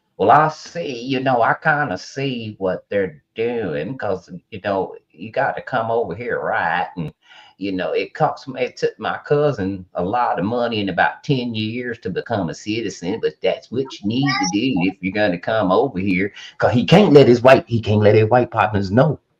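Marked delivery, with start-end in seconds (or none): 0.2-16.3 put-on Texas cowboy accent. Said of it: "he's talking just like this".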